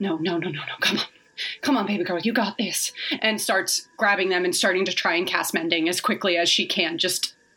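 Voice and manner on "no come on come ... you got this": muttering, mumbling under breath. She hurriedly collects scattered pieces from the ground, muttering under her breath. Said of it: "muttering under her breath".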